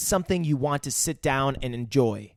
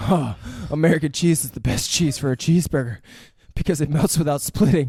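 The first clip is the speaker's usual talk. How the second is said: put-on heavy breathing, breathless excitement, louder; 5 dB louder than usual. Retelling a film scene where the chef answers: imitating heavy breathing. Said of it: "breathing heavy".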